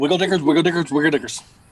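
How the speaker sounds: said rapidly three times in a row. Answering a request to say the phrase fast three times: said fast three times. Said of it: "Say it fast three times".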